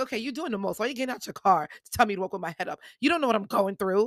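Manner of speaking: acted, annoyed, exasperated, fed-up tone. Retelling own thoughts about a stranger's unwanted advice: imitating own past annoyance. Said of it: "I was angry".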